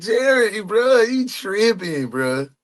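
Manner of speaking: talking through laughter. Reacting to a post about someone, unable to stop laughing; laughing while talking. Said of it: "I can't stop laughing".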